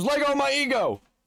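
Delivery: put-on, wild, high-pitched shrieked outburst. Retelling what another person screams: imitating someone screaming. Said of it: "and then he just screams".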